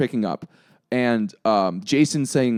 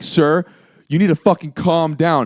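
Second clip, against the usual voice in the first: put-on screaming, much slower; 4 semitones higher, 4 dB louder than usual. Retelling how a cop started yelling at the speaker, retelling a cop screaming. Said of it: "the cop starts screaming at me".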